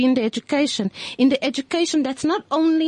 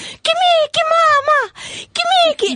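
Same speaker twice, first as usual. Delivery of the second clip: mock very high, shrill, thrilled excited shriek; 14 semitones higher, 5 dB louder than usual. Retelling a three-year-old girl seeing Mickey, acting out a child screaming. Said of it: "she's screaming".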